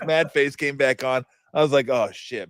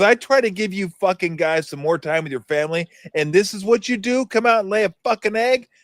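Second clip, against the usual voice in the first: pitched-up, mock coach's halftime tirade; 7 semitones higher, 3 dB louder than usual. Retelling a halftime talk after a bad first half: imitating coach Nelly's halftime rant. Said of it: "He goes".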